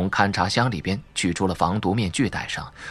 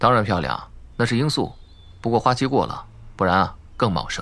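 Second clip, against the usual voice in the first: plain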